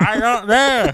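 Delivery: very high-pitched screaming right into the mic. Answering another speaker's question while laughing, screaming into the mic. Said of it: "Please don't scream into the mic".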